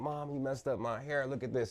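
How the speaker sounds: high, teary, put-on crying voice. Retelling complaining to mom about a haircut: imitating own past crying. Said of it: "I'm crying".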